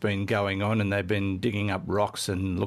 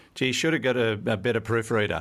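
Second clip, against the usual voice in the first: plain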